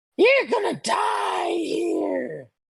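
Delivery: very high, slow, rough cackling demon voice. Voicing a demon threatening the party in a game: cackling demon voice. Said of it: "you hear this demon kind of cackle".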